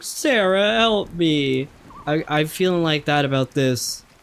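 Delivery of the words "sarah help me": play-acted desperate, panicked, high cry. Retelling a video of a kid sinking his kayak: imitating a sinking kid calling for help. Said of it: "he's sinking his kayak, and he's like".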